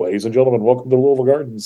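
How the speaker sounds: arena ring announcer's booming PA voice. Recalling the ring announcer's PA greeting at the arena: imitating Dean Hill's announcer voice. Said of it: "He was the voice on the P A".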